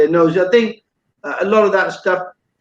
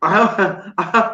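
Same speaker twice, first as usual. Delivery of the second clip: ordinary talk, nothing marked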